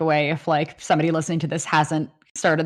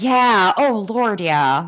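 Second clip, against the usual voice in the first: Upper Midwest Minnesotan accent; 3 semitones higher, 3 dB louder than usual. Agreeing in conversation, Minnesotan accent. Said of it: "I sounded super Minnesotan just there".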